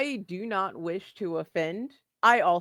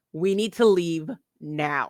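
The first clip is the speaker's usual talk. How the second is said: put-on firm, authoritative, commanding big kid voice; 4 dB louder than usual. Playing a role in a scene, speaking up in a commanding big kid voice. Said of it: "I'm going to put on my big kid voice".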